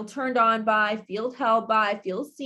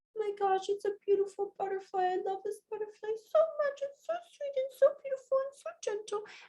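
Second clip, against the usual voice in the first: put-on very high, gushing, delighted toddler voice; 10 semitones higher, 8 dB quieter than usual. Speaker acts out a two-year-old holding a butterfly, imitating a delighted toddler. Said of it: "take example of a 2-year-old".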